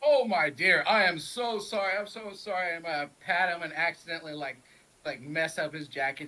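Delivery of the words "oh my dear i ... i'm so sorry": loud, drawn-out, phony, insincere tone. Player's character pretending the bump was an accident, fake apology. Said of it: "I'm just messing with him basically".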